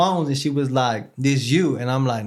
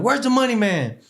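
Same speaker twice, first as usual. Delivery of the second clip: angry, high-pitched screaming; 8 semitones higher than usual. Retelling how the warden came down to the dorm looking for him, retelling a scream. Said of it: "He's like screaming like".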